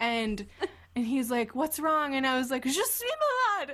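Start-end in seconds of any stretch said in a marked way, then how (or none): 2.6-3.7 mock sobbing, much higher. Retelling answering a ticket guy who asked what's wrong, acting out sobbing. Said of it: "I'm me crying, sobbing".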